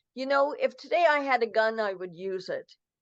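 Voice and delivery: ordinary talk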